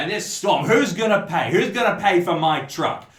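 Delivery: put-on loud, high-pitched, drunken-sounding ranting. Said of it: "he is ranting".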